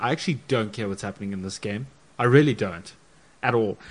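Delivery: ordinary delivery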